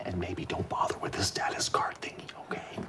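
hushed, breathy whisper. In a scene, bank staff speaking to a customer, whispering.

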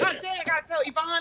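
ordinary talk, nothing marked

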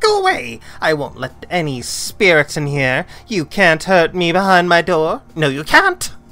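very loud, shrill, high, creaky shriek. Narrator voicing someone shouting over the intercom from behind a door: high-pitched creaky shriek. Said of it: "A high-pitched creaky voice shrieks out".

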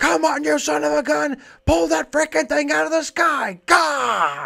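very high, loud, exasperated, agitated shouting. Acting out a teacher after the learner fails a fifth time: mock-agitated shouting. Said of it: "real inspirational. Teacher to learner".

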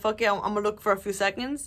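plain

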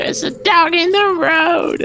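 very high, put-on voice pushed way up. Repeating a silly lyric, the speaker gives a Marge Simpson impression. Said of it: "Marge Simpson, that's really good".

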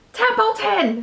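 sudden, high, urgent shriek. A pig tosses a sleeping rat into the air to wake him, screaming. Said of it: "screamed Wilbur".

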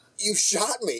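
dazed, drifting in and out. A wounded man looks up at the person who shot him, dazed, drifting in and out. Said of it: "he's sort of like in this in-and-out mode".

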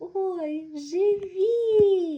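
very loud, high, glad joyful cry, drawn out. Kosia greets Khriusha and Kolko after they land in the grass, joyful. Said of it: "Кося до них радісно".

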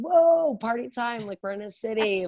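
high, excited, thrilled whoop. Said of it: "it was like".

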